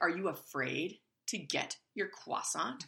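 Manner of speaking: irritated, needling, annoyed negative tone. Recounting urging him to get his croissant, retelling her annoyed question. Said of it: "my voice and my tone is getting very negative".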